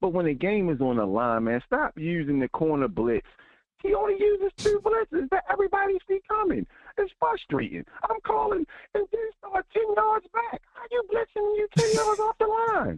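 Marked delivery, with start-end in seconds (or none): 3.8-13.0 very high, squeaky voice. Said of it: "the Mickey Mouse voice for, for that long is crazy".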